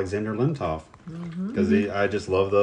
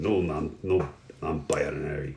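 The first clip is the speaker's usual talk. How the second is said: slow, deliberate, laid-on put-on Russian accent; 5 semitones lower, 8 dB quieter than usual. Quoting a favorite line from a character: Alexander Lemtov Russian voice. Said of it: "That's a pretty good Russian voice".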